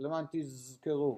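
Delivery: normal talking voice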